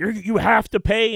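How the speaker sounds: very slow, deliberate, high, drawn-out scolding scream. Telling a story about getting a haircut, retelling a woman's scream. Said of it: "She's screaming".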